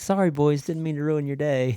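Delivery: high, mocking, teasing tone. Retelling how she taunted other players over the headset, in mocking trash talk. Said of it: "she'd always talk junk to them".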